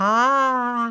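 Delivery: very slow, loud, drawn-out ha. Telling a story where even laughing goes slowly, a very slow 'ha' laugh. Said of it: "natürlich geht auch das Lachen ganz langsam. Das klingt dann so".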